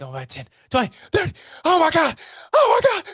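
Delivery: acted shrill, very high, frantic play-by-play announcer voice. Recalling the Auburn radio commentator's famous call, imitating a commentator losing it. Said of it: "he's genuinely losing his shit".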